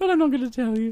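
low, storybook cartoon bear voice. Speaker answering the other host, sounding like Winnie the Pooh. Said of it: "You sound like Winnie the Pooh".

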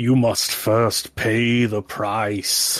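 grand, ceremonial, oracle-like intoning tree-man voice. In a game, the giant tree man jutting from a patient speaks: intoning giant tree man. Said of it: "A giant beanstalk that eventually bifurcates into the shape of a man goes shooting through the roof. / It's just Miss Zephyr's taking a nap and there's just a giant 50-foot tree man jutting out of her".

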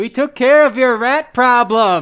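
very loud, very high, very slow, drawn-out bellowing yell. Telling a character their rat problem is taken care of: yelling. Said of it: "Why is he yelling at me?".

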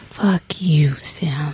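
sultry, seductive, very sexy voice. Asked by the host for one favor, the guest says it in the sexiest voice. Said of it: "in like maybe the sexiest voice".

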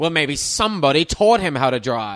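pointed, very loud accusatory tone. Retelling a film character's line about driving: imitating an accusatory tone. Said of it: "he says it in an accusatory way".

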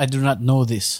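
put-on Russian accent. Asked by the others to do a russian accent, in a russian accent. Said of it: "do a Russian accent".

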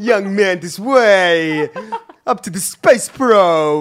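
acted cartoonish police officer voice. Greeting a visitor to a theme park: Officer Dibble voice. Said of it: "It's Officer Dibble".

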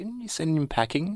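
gently spoken, soft-toned, slightly high voice. Recalling a favorite scene, quoting a character's line, said softly. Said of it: "kind of softly says".

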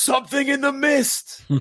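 full-throated, shrill, very high, very loud scream. Retelling a movie scene where a bleeding man runs in: imitating someone screaming. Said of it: "runs in the store and screams".

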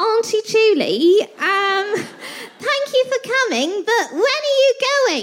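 put-on English accent. Retelling what was said to her in her kitchen, imitating Daisy's English accent. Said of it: "She's just so fucking English".

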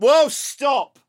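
mock, very high, fed-up, angry shout. Retelling losing it after hours of hammering and grinding next door, retelling an angry shout. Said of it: "I blew my top".

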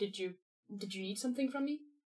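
puzzled tone. Voicing a character who finds someone waiting at the mirror, confused.

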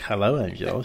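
low, soft, flirty, coy and coquettish. Retelling arriving at Woody's, speaker imitates Christopher's coquettish greeting. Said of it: "he looks at me all coquettishly".

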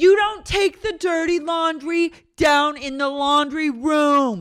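very high, loud, yelled rant. Mocking someone who has cult leader vibes: imitating her yelling. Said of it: "she just starts yelling".

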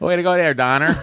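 put-on Boston accent. Joking after misreading a name, answering a remark: put-on Boston accent. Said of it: "you said it like a Bostonian".

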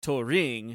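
Turing, stress on -ring, weight on the R. Showing the wrong way to say the name: stress on the R in TURING. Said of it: "you put the emphasis on the R".

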